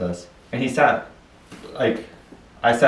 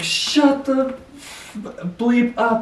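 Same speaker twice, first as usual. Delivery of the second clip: very high, very slow, drawn-out angry screaming yell; 13 semitones higher than usual. Describing a man who talked to himself then suddenly yelled, retelling a yell and scream. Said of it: "just like yell and scream".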